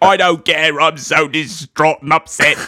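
put-on Cockney accent delivered in a screen-actor style. Retelling a scene, the speaker quotes a character's line as a Michael Caine impression. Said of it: "Because he's Michael Caine".

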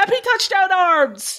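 high, slow, thrilled and excited yell. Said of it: "there was tears yelling at my screen".

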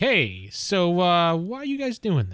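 put-on talking-down-to-kids voice. Players describe how their hero would address children, imitating an adult talking to kids. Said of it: "he's like an adult guys?".

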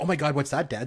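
ordinary delivery

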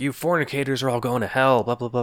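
acted, high, ranting fire-and-brimstone preacher voice. Retelling a campus pastor's sermon to students: imitating a pastor screaming. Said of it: "just screaming the insane bullshit".

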